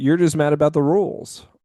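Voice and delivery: high little put-on tone. Retelling what a show character said, imitating her little tone. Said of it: "with her little tone there".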